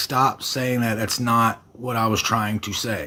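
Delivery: ordinary delivery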